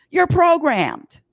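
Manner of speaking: very high, loud yell. Summarizing what another speaker said about technology: yelling. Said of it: "I don't know why I'm yelling".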